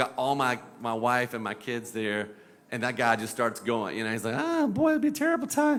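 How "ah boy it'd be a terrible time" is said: squeaky cartoon imp voice, pitched way up high. Recounting a narrow cliff road drive, he quotes a man in a Noid voice. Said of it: "mine kind of sounds like the Noid".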